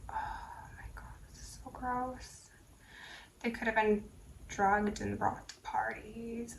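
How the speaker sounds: barely-there whisper, very quiet and hushed. Reading disturbing material aloud for a YouTube video, whispering. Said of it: "I'm like whispering".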